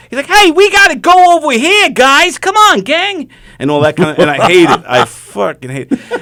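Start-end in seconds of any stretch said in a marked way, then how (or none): 0.3-3.3 bad put-on Long Island accent, very high, loud, slow. Showing others a pet peeve heard in movies and on Broadway, in a bad Long Island accent. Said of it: "the bad Long Island accent".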